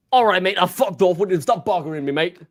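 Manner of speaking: aggressive, hard and hostile delivery. Imagining the manager answering a podcaster's live call: mock aggressive Martin Cifuentes. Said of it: "a dead aggressive phone call".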